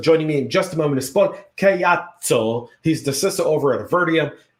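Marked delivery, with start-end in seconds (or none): 0.0-2.7 fake, put-on Italian accent. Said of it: "I did it with my Italian accent".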